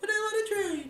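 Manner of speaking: very high, put-on girlish voice. Voicing a hypothetical trader during a trading talk, in a girl voice. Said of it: "I don't know why I did girl voice for that".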